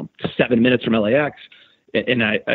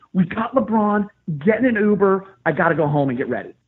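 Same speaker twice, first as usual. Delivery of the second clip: mock high screaming, shouted; 9 semitones higher than usual. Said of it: "literally screaming in the phone".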